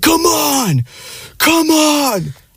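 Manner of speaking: acted, very high, very slow, drawn-out hollering. Imitating an upstairs neighbor yelling while watching sports: imitating a neighbor yelling. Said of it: "I'll hear him yell".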